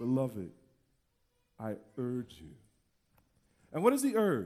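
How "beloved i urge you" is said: very low, tender, loving tone. Reading the apostle's urging words aloud: loving, tender, lower tone. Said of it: "loving, tender, lower tone".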